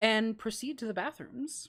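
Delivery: plain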